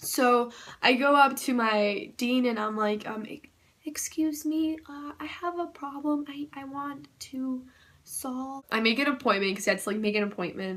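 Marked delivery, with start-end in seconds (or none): 3.3-8.6 put-on soft-spoken voice, higher and quieter. Retelling asking the dean for help: imitating own past soft-spoken voice. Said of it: "I'm speaking like that because that's how I was".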